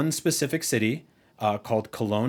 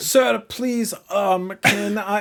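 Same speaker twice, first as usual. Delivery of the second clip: bad put-on German accent, higher and louder; 10 semitones higher, 4 dB louder than usual. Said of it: "using an accent. It's very bad".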